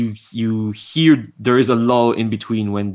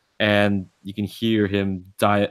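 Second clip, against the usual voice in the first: normal talking voice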